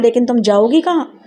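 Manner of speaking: ordinary talk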